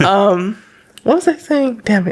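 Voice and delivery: crying voice, words pushed out through tears. Speaker trying to recall the point mid-conversation, crying. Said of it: "let me stop crying".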